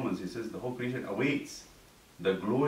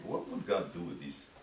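dry, sarcastic, doubting tone; 3 semitones lower, 5 dB quieter than usual. Acting out heaven looking at us and asking: acting out sarcastic tone. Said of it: "in this, uh, sarcastic way".

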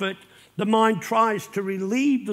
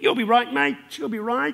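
put-on breezy, chirpy, happy-clappy cheerfulness; 2 semitones higher than usual. Imitating careless comfort offered to a griever: mock happy-clappy cheerfulness. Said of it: "don't go up with a happy clappy".

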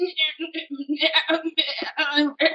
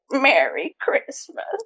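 low put-on grandma voice; 6 semitones lower than usual. Doing a grandma impression after being asked to: grandma impression. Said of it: "That was my impression".

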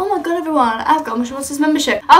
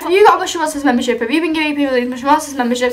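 ordinary talk

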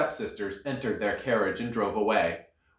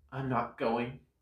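sighing, much quieter, slower; 8 dB quieter than usual. Narrator reads Cinderella answering her teasing stepsisters, sighing. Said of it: "Cinderella sighed".

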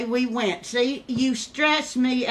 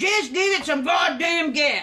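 mock, mild, half-yelled hollering; 4 semitones higher than usual. Reminding the other person how they yelled about the gas, retelling someone screaming. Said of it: "hollering, screaming".

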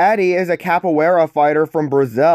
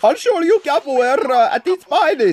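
horrible fake Brazilian accent, very high; 11 semitones higher than usual. Reading a line aloud, trying an accent: bad put-on Brazilian accent. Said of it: "I'm gonna try to read this in a Brazilian accent".

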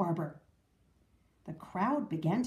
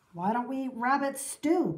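ordinary delivery

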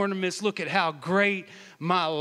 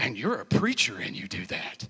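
put-on shocked, scandalized, gasping disbelief; 8 semitones lower than usual. Retelling how people react to a preacher, imitating appalled people.

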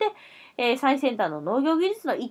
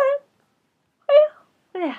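very high, loud, words stretched mid-yawn; 7 dB louder than usual. Host about to give tomorrow's weather forecast, yawning. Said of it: "あくび出ちゃった".

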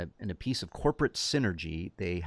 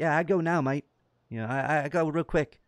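put-on slightly higher pitch with New Zealand accent; 8 semitones higher, 3 dB louder than usual. Acting out a shark sultan character in a script idea: Taika Waititi voice. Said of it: "it's Taika Waititi's voice".

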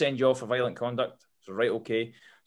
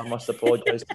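mock deadpan delivery. Speaker retells a man's apology, imitating a deadpan apology. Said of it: "he's completely deadpan when he said it".

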